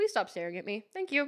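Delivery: mock cheeky, sassy tone. Acting out a line to say to another driver: acting out a sassy remark. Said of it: "but just sassy".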